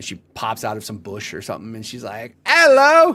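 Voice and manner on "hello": sudden, very high, shrill, very loud outburst. Imagining a woman in chat popping out of a bush: impression of her. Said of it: "That was a perfect impression".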